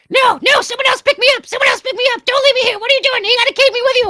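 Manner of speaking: shrill, very loud, rapid, frantic panicked yammering. Voicing a talking skull left on a shrine, yammering: yammering bird skull, panicked. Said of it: "this skull just keeps yammering".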